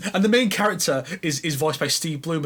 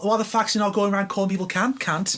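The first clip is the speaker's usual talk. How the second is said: put-on Australian accent, higher pitch; 4 semitones higher than usual. Joking about a Tekken character's missing accent, Australian accent. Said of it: "his proper accent because he's Australian".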